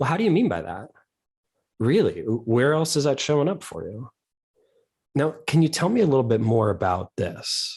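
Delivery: mildly doubtful, skeptical, curious probing tone. Demonstrating example follow-up questions to ask someone, slightly skeptical, curious tone. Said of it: "It's that slightly skeptical, curious tone".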